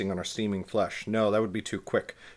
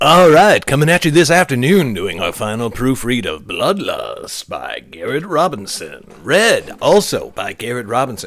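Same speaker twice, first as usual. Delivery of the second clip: loud, swooping, put-on radio announcer voice; 12 dB louder than usual. Opening a final proofread session of their book, the speaker slips into a radio announcer voice. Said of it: "Why'd I get into my radio voice?".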